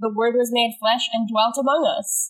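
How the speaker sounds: ordinary talk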